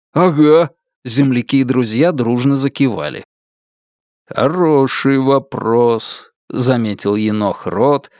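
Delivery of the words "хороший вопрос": knowing, assured tone. A lieutenant answers his comrades' question in the truck, in a knowing tone. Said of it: "таким тоном, будто знает ответ".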